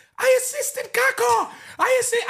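thrilled, excited shriek pitched very high. Retelling running to a teammate after an assist, retelling excited screaming. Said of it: "I'm screaming it".

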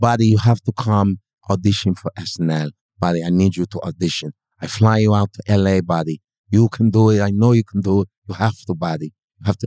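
put-on heavy Persian accent. Retelling a club owner's call urging an audition: imitating Jamie Masada's Persian accent.

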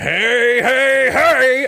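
loud, belted, very high-pitched character voice. Acting out a man answering a screaming mob of press as he walks, in a loud Fat Albert voice. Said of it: "as loud as he could in the Fat Albert voice".

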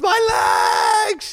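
put-on overblown, very high, shouted kid scream. Retelling how a boy screamed when the seat crushed his legs: imitating a boy screaming. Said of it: "He started screaming".

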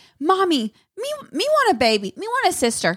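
put-on high, sing-song, babyish toddler voice. Retelling what the child said when not trying to nap: imitating a toddler. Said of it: "he's like".

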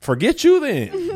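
put-on huffy voice, high, loud and slow.

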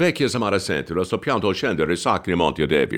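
nonsense sounds in a fake Italian accent. Retelling a performance in Italian without knowing the words: made-up Italian sounds with Italian accent. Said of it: "making up sounds with an Italian accent".

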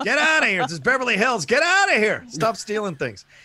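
acted high-pitched yelling. Acting out chasing off passing hippies in open-top cars: mock yelling at hippies. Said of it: "I like yelling at the hippies".

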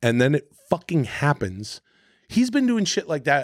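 ordinary talk, nothing marked

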